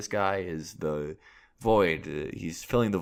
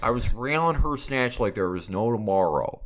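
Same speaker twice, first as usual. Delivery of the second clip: put-on Michigander accent, higher and louder; 4 semitones higher, 4 dB louder than usual. Quoting a YouTuber's famous video: Demonius X Michigander accent. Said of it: "very Michigander accent".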